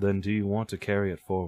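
distant voice, coming from far off. Speaker narrating a scene, voicing a distant voice. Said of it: "you can hear a distant voice".

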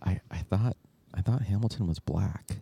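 halting, half-whispered stage whisper aside. Retelling what the people in the next seat said: imitating a half-whisper. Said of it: "kinda whispering to each other".

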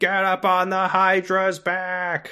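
shrill, very high-pitched shouted yell. Describing a video game character who keeps shouting, imitating Phil yelling. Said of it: "constantly yelling".

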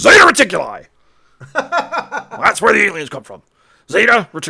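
wildly animated, loud, high, swooping delivery. Answering a trivia question about what zip code means, in an Alex Jones voice. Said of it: "in my best Alex Jones voice".

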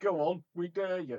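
mock shout, slow and high. Acting out podcast listeners answering the hosts: mock shout. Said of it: "followed closely by them shouting".

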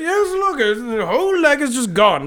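high, stiff, unruffled, posh British understatement. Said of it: "being super British and upper, upper, stiff upper lip".

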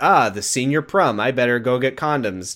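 ordinary talk, nothing marked

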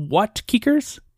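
cold, haughty, high voice. Telling a story, voicing a woman replying to a man, in Frostina's cold, haughty voice. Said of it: "the woman's voice, cold and haughty".

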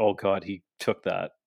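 ordinary talk

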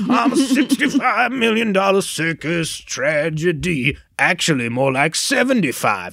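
slow, high-pitched, drawn-out Southern drawl. Retelling a stage villain's line in a put-on Southern accent. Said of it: "the Green Goblin has a Southern accent".

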